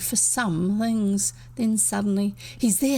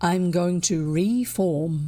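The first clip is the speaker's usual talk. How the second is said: low, sunk, mysterious, secretive, very slow, drawn-out voice; 3 semitones lower than usual. The narrator reads William's answer to Ginger in a sunk, mysterious voice. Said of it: "William sank his voice mysteriously".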